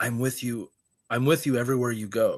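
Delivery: put-on creepy whisper. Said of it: "it said it in, like, a whisper".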